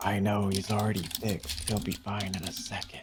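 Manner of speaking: hushed, soft whisper under the breath. In a scene, speaking to Alesh, whispered under the breath. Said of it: "whisper under my breath".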